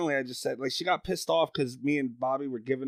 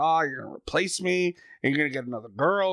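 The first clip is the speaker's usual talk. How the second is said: put-on angry voice; 2 semitones higher, 3 dB louder than usual. Retelling a co-host's reply to being told she could be replaced: imitating someone angry. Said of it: "she got really mad".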